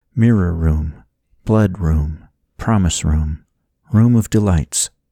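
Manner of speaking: ordinary delivery, nothing marked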